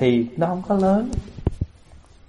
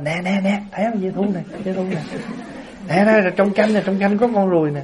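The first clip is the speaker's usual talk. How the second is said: high, excited, fussing outcry. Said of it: "Thì mình la làng lên như vậy á".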